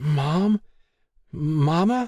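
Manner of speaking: very high, trembling, stuttering, stammering cry. Stacy, feeling sick on a phone call, calls out; stammering. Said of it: "Stacy stammered".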